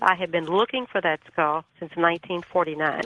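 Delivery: plain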